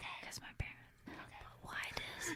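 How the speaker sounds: whispering. Talking with friends while the speaker's parents are nearby: whispering. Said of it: "I have to whisper".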